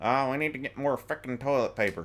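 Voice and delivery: loud, very thick, jokey put-on Southern accent. Retelling a remark made to a woman who took offense: thick jokey Southern accent. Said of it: "in a very thick, funny Southern act, or like jokey Southern accent".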